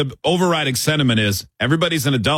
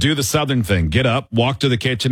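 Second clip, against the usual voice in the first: ordinary delivery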